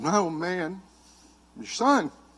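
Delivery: put-on crying, soft, tearful, pleading tone. Retelling pleading with his dad as a boy: retelling crying and begging. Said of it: "I'm crying, I'm begging him".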